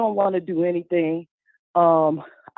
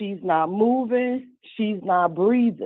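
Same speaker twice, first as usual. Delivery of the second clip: ordinary delivery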